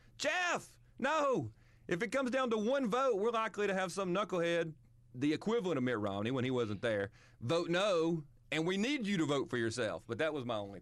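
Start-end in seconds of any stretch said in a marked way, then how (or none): 0.2-4.7 very high, shrieked yell. The speaker recalls watching a senator on tv and retells screaming at the tv. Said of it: "I was screaming at the TV going".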